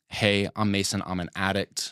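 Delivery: normal talking voice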